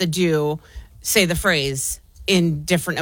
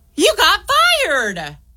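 gleeful, bright, very high happy tone; 13 semitones higher, 4 dB louder than usual. Playing an emotion game, delivering the given phrase in a happy tone. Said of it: "In a happy tone".

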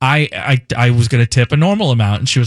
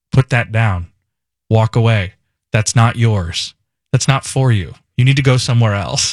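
steady, very calm fatherly dad voice. Retelling telling a woman breaking into the house to leave: retelling own calm dad-mode voice. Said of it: "And I very calmly".

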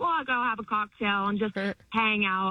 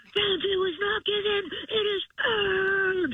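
very high, slow, drawn-out whisper-shout; 12 semitones higher than usual. Retelling what a man said to himself in the mirror: retelling a whisper-yell. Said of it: "whisper yelled".

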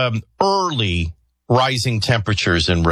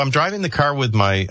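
usual speaking voice

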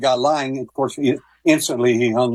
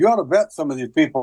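usual speaking voice

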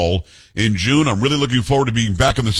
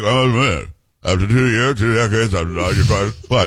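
put-on low, mumbling old politician voice; 3 semitones lower than usual. Imitating a senator who was reported mumbling to reporters: mumbling Mitch McConnell impression. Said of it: "I'm doing an impersonation".

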